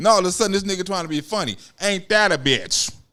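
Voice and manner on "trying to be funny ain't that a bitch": normal talking voice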